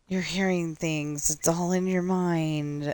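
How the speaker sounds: spooky stage whisper, mind drawn out. Playing a game, voicing Herobrine, who is trying to scare them: Herobrine stage whisper. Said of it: "in a stage whisper going".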